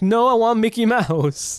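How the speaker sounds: put-on upset child flipping out, high-pitched. Imitating a daughter refusing to watch anything else: imitating an upset daughter. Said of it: "she's gonna flip".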